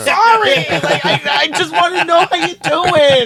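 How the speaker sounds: high apologetic voice.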